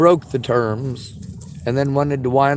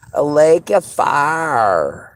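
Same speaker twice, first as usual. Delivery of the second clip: put-on nerdy Southern drawl, fire stretched; 4 dB louder than usual. Repeating a phrase just said, speak in a southern nerdy voice. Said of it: "We'll say it in our southern nerdy voice".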